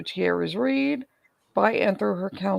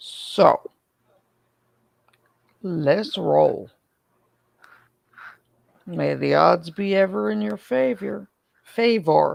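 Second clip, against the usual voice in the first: hoarse, raspy voice that keeps cracking; 3 dB louder than usual. Starting a stream while apologizing for the voice: hoarse voice, keeps cracking. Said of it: "I sound like I smoke multiple packs a day".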